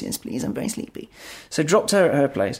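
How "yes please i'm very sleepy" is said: put-on tiny little voice, much quieter. Retelling her reply when offered a ride home, imitating her tiny little voice. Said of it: "Tiny little voice".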